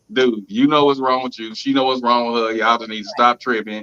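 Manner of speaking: ordinary delivery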